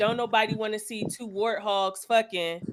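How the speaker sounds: plain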